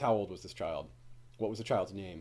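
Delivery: play-acted, very quiet, low, level, flat monotone. Retelling a scene where Dany questions Missandei, in Dany's flat voice. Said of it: "she's asking these questions very in a very flat voice".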